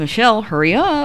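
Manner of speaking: whisper from side of mouth. Recounting what the speaker said to a companion; retelling a side-mouth whisper. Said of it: "whispering through the side of my mouth".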